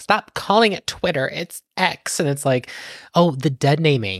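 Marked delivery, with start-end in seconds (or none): 0.0-2.2 mock worked-up, aggrieved, all upset, insistent tone. Retelling what a CEO said: imitating Musk getting upset. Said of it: "he got all upset".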